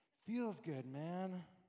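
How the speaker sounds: very low, soft, hushed hippie murmur. Talking about people going off on tangents because it feels good: hippie voice. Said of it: "Is that hippie sounding?".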